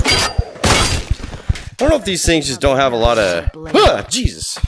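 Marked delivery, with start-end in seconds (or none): 3.5-4.6 sudden, startled, high, frightened yell. Hearing someone talking behind while in the middle of talking: startled yell. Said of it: "didn't mean to yell like that".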